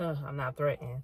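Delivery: imitated voice, half laughing. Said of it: "kinda laughing".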